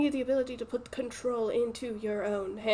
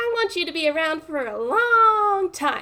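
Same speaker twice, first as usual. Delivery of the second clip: put-on baby voice, higher and louder; 7 semitones higher, 7 dB louder than usual. Voicing a message in a mimicry of Camille: Camille's baby voice. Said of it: "I'm gonna try and do the baby voice".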